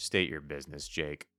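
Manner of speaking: stiff, serious, cool, low, flat monotone. Showing how a line to Jake should sound: uptight serious monotone. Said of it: "All uptight, like serious, monotone, cool monotone".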